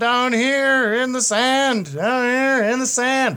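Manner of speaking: shrill, very high, very loud yelling. Game master voices lost friends calling out to a player: yelling. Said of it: "What are you yelling?".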